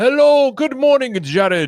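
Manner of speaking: put-on very high-pitched, slow, drawn-out Scottish accent. Retelling how the Scottish neighbor greets him: imitating Craig, Scottish neighbor. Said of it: "he's Scottish".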